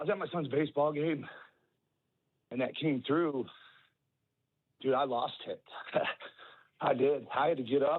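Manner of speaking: heartfelt, emotional, struggling to keep composure. Speaker telling Cubs fans about being at their son's baseball game: getting emotional. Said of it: "I'm getting emotional now".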